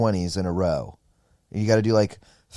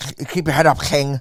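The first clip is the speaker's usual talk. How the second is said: put-on Scouse accent, pitched higher; 5 semitones higher, 4 dB louder than usual. Retelling what a friend said after a set: imitating Kyle Legacy's Scouser voice. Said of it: "it's crazy how he sounds".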